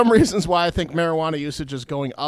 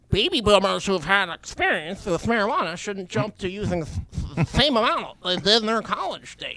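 put-on nerdy voice; 4 semitones higher than usual. Reading an article aloud, in a nerd voice. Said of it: "You might have gone inaudible on the nerd voice".

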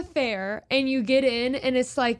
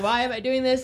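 ordinary talk, nothing marked

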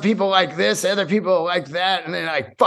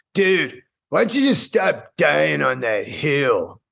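mocking, obnoxious dude voice. Reading a comment aloud the way they hear it in their head: shitty dude's voice. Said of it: "I read it in some fucking shitty dude's voice".

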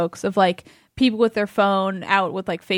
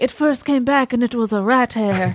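badly faked, really bad French accent; 4 semitones higher than usual. Speaker compares the story to a scene in Ratatouille: bad Ratatouille accent. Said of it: "That was a really bad accent".

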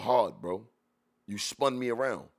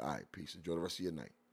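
very quiet, steady, calm and unbothered; 7 semitones lower, 14 dB quieter than usual. Retelling a reply to a man who backed down: imitating own calm reply. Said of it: "talk to him very calmly".

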